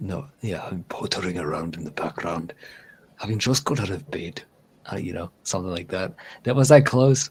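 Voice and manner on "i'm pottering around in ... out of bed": put-on Scottish accent, lower and quieter. Repeating the line after practising the accent: imitating Andy's Scottish accent. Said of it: "Scottish, Scot-, mm, Scottish".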